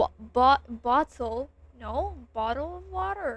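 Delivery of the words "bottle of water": very American accent and pronunciation. Trying to make a phrase sound really American: really American accent. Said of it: "how do I make it sound really American?".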